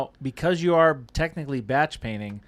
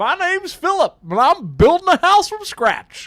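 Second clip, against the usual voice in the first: squealing, very high-pitched shout; 9 dB louder than usual. Redoing the impression after being told it missed: Philip impression. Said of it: "doing my best Philip impression".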